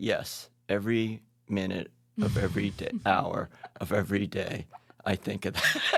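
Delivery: mock very low, slow, emotionless, straight deadpan. Retelling his wife's answer to a joking question: imitating a deadpan reply. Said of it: "she said in the straightest face".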